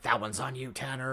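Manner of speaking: muttering under breath. Retelling a movie character's line: imitating muttering under his breath. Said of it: "under his breath".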